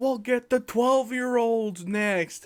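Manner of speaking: shouting voice. Retelling how the farmer running the event yelled across the crowd: imitating someone yelling. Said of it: "yelling over the crowd to me what to say".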